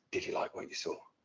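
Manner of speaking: hushed, breathy whisper from right behind. Retelling what someone whispered from close behind: imitating a whisper. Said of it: "And he whispered".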